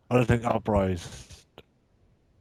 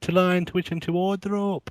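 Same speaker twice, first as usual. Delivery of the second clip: high, slow, drawn-out bad British accent. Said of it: "that accent".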